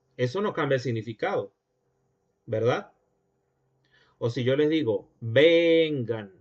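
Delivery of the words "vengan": vengan, vowels stretched long and drawn out. Explaining that lengthening vowels keeps the meaning: stretched vowels in vengan. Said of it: "estoy alargando las vocales".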